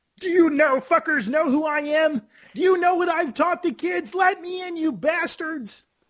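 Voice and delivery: very high-pitched, funny puppet voice. Imagining what Kermit would say at the Pearly Gates: Kermit voice cursing. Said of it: "funny voice cursing".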